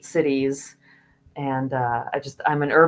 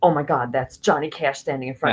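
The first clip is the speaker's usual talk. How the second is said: imitated starstruck, flabbergasted awe and amazement. Retelling seeing a famous person up close: imitating own starstruck awe. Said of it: "I was just so flabbergasted".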